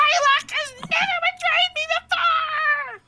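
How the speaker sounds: ridiculous, very high, shrill, loud squeaky screech. A game narrator voices an enraged character: ridiculous squeaky high voice. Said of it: "He's got this really ridiculous squeaky high voice".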